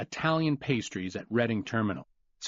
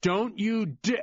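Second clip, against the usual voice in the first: annoyed, irritation spiking, pitched-up voice; 8 semitones higher than usual. Reading a phone call where the assistant gets cut off: annoyed voice. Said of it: "The annoyance spiked in the assistant's voice".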